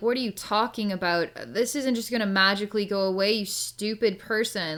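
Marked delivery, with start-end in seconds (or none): none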